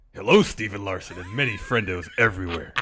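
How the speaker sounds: loud, booming, grand delivery. Answering a request to do a voice: Atlantis Professor voice. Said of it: "do Zach Stolpa in the voice of the Atlantis Professor".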